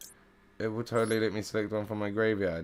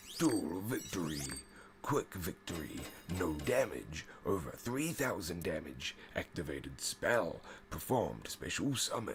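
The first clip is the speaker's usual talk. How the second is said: low, deep, hushed put-on voice; 3 semitones lower, 7 dB quieter than usual. A streamer calls out duel results at night: deep voice. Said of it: "We get to do our deep voice again".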